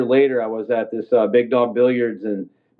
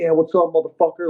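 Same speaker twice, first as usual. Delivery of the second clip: mock hyped, aggressive, taunting, pitched up; 5 semitones higher than usual. Recounting a fight, acting out his own taunt mid-scrap: retelling a pumped-up taunt. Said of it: "I'm pumped up at this point".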